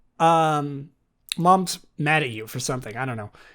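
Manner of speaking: ordinary talk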